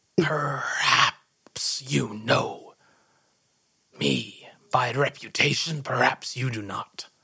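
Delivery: hushed, husky whisper. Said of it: "And in a husky whisper".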